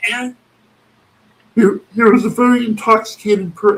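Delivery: very high puppet frog character voice. Trying to imitate a man who sounds like Kermit, in a Kermit the Frog voice. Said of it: "It's like an octave lower than Kermit".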